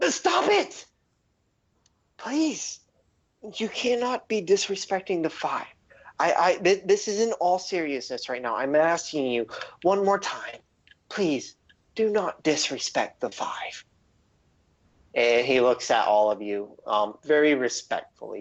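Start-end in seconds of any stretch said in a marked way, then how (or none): 0.1-13.8 deeply sincere, earnest, passionate pleading, stumbling over words. Voicing a man who begs the players not to disrespect the five: very sincere, passionate plea. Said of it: "you can tell he's being very sincere".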